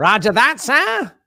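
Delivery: put-on old British newsreel accent. Replying to orders to keep quiet, in a British old-newsreel accent. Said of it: "a cross between between some sort of British accent and that old news speak".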